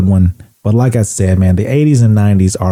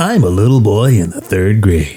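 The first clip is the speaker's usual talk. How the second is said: low radio countdown host voice. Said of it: "That's Casey Kasem".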